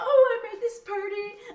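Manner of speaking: put-on excited voice. Retelling how the busboy boasted about the party: imitating Troy, put-on excitement. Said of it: "He was all excited".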